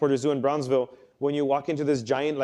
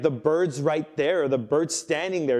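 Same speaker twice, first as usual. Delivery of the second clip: normal talking voice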